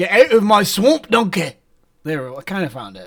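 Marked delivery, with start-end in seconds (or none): 0.0-1.5 put-on Scottish accent in an ogre voice. Trying out an accent with another speaker, saying the line in a scottish accent. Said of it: "What does a Scottish accent sound like?".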